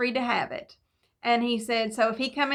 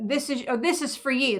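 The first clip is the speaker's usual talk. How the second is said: put-on blunt, no-nonsense, matter-of-fact plain tone. Retelling what a neighbor said when handing over money: imitating a blunt delivery. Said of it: "he just said it very bluntly".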